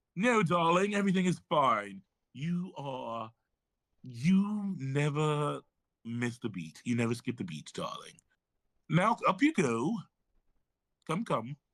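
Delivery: mock British voice, fake accent. Speaker acts out a man's words in a story, in a put-on British accent.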